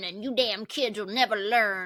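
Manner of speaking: put-on cranky, crotchety old man voice. Describing an old man in an interview, crotchety old man voice. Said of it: "like crotchety old man".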